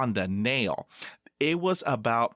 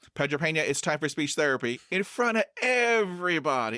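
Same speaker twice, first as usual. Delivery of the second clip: calling out loudly, carrying voice; 4 semitones higher than usual. Retelling how someone knocked on the door and called him out, very loud voice. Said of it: "talking in a very loud voice".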